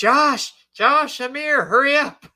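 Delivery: very high, loud, drawn-out shrieking scream. Retelling how Marion called out in the courthouse: imitating Marion screaming. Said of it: "Marion was screaming".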